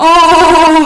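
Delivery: high, loud, haunting spooky ghost voice. Leading a shapes lesson, saying the shape's name with the listeners like a ghost. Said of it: "we're going to say it like a ghost".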